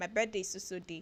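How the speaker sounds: ordinary talk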